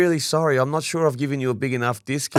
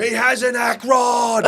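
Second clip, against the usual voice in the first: mock very slow, stretched-out, high drawn-out scream; 9 semitones higher than usual. Retelling a gate attendant's shout at a parking attendant: imitating a woman screaming. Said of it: "screaming at this poor parking attendant".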